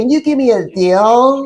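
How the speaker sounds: put-on high, slow young teenage voice, "deal" stretched out. Retelling a customer's request for a discount: imitating a teenage-sounding voice. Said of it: "like some little teenager".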